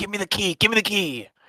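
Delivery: forceful stage whisper-shout, very high. Voicing a character demanding the key while someone knocks, whisper-shouting. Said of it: "whisper shouts".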